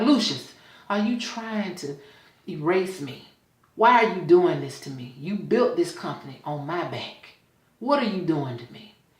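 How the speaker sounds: put-on crying, tearful pleading voice. Retelling a scene where she begs him while crying: imitating a crying plea. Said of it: "She's crying and she's asking him".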